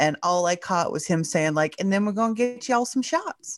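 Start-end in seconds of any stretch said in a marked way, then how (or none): 1.8-3.6 put-on Southern accent pitched up. Quoting a senator heard on NPR: Southern accent. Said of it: "he had a really great Southern accent".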